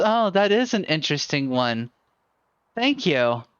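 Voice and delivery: mock-giggly, acted-out giggle. Telling a story, the speaker acts out a woman's reply, imitating her giggling. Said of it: "she kind of giggles and looks up".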